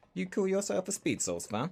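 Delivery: English accent, high-pitched and swooping.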